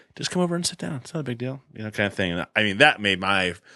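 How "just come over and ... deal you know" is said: subtle, soft, quick, creepy coaxing tone. Retelling the voice a woman described hearing, very subtle voice. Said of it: "this very subtle voice saying".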